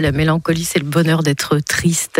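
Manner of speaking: ordinary talk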